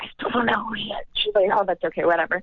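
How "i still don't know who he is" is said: whispered, quieter. Speaker retells what they whispered to her about the man they met, whispering. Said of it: "And I whispered to her".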